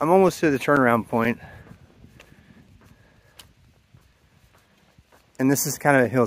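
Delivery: breathing hard, out of breath. Speaker going up a hill greets someone: breathing hard. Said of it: "It's got me breathing hard".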